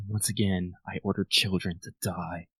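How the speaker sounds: slow, very soft, hushed half-whisper in a put-on voice. Voicing a character after soldiers died: half-whispering in character. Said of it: "You just hear Armand whisper, whisper".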